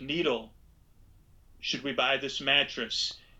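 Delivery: play-acted dry, expressionless, level deadpan delivery. A speaker quotes what others said to them, retelling a deadpan question. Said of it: "And this was all deadpan".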